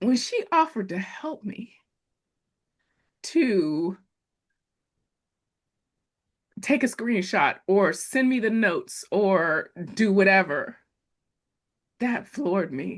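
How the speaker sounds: emotional, holding back tears. Recounting when someone offered to help, getting emotional. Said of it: "okay, I'm getting emotional".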